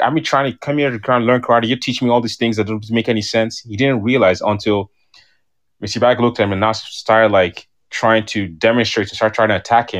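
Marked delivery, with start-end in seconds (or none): none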